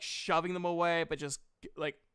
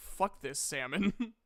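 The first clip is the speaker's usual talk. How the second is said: grumpy huffing bear voice, quieter; 3 semitones lower, 4 dB quieter than usual. Joking about a sound effect as a bear: annoyed huffing bear. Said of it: "an annoyed, like, bear. Like, huffing".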